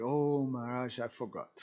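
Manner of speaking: ordinary talk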